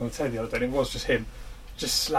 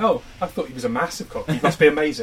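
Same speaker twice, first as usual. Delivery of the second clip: normal talking voice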